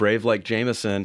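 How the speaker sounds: ordinary delivery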